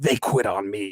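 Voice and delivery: very low, very slow movie-car voice. Showing another speaker how to do the voice with bass: Doc Hudson voice from Cars. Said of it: "you gotta go".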